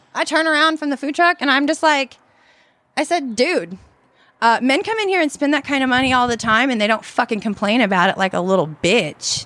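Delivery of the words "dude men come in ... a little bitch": ordinary delivery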